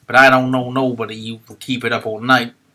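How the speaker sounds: put-on loud young cabbie voice. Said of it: "he said".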